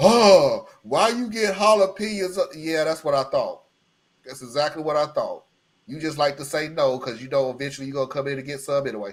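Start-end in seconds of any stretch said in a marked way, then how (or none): 0.0-2.4 loud, very slow, dragged-out complaining tone. Retelling what she said about the jalapenos on the pizza: imitating her complaint. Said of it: "what's the first thing that she did?".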